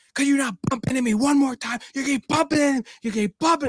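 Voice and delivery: acted-out shrill, very high, complaining yell. Retelling what a woman in a festival crowd said: imitating a woman yelling. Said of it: "this woman is, like, yelling at me".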